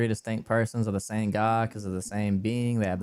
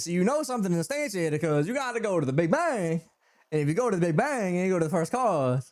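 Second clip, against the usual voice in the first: high, scoffing, derisive mock caricature voice; 8 semitones higher than usual. Imitating how these people sound arguing about the Big Bang: imitating how these people sound. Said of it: "this is literally how these people sound".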